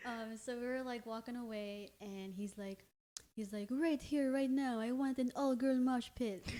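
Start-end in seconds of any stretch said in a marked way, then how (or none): 3.7-6.5 light, little put-on French accent. Imitating him on request after the other praises his accent: imitating his French accent. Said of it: "I loved his little French accent".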